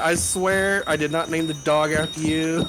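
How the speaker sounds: ordinary talk, nothing marked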